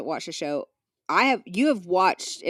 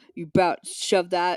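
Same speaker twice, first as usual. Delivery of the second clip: put-on irritated tone. Retelling a brother's reaction to his sister's bell ringing: imitating Chris sounding annoyed. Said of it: "he's so annoyed".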